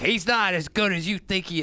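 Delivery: ordinary delivery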